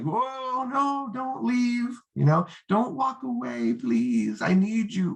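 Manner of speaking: very high, drawn-out begging plea. Showing how trying to convince someone sounds desperate, mock begging. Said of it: "like you're begging".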